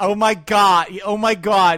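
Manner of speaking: exaggerated Boston accent. Mocking how a woman with a hardcore Boston accent talks; exaggerated Boston accent. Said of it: "Boston doesn't sound like that".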